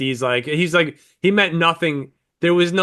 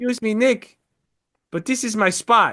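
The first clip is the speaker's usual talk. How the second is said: put-on Polish accent; 7 semitones higher than usual. Retelling a guy who came up to him at a table: Polish accent. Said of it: "like a fucking Polish accent".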